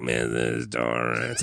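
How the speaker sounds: put-on raspy smoker robot-throat voice. Imitating Tony: Tony voice, smoker with robot throat. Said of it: "I smoked for a million years and now I have a robot in my throat".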